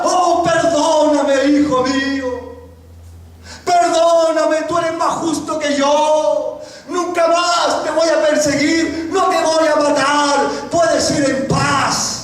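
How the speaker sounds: slow, weeping, pleading delivery.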